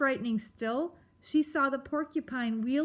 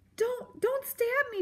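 very high-pitched cry through chattering teeth; 11 semitones higher than usual. Facing the porcupine, a character cries out through chattering teeth. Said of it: "Poppy cried through chattering teeth".

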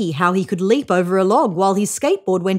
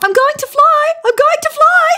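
shrill, very high, excited yell; 6 dB louder than usual. Emu, pushed down the slope by Koala, Possum, Billy and Norm, yelling. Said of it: "yelled Emu".

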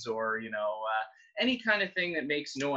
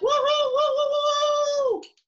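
very high, loud whooping, woo-hoo stretched out; 9 dB louder than usual. Leading children playing sticks as loud as possible: loud. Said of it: "as loud as we can".

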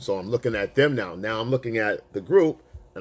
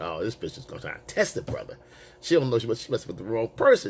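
ordinary talk, nothing marked

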